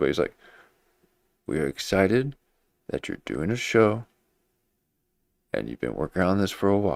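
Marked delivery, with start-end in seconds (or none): 1.5-7.0 overly dramatic cadence with heavy pauses. Retelling how someone greeted a guest: imitating dramatic pauses. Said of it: "So why are you talking like that?".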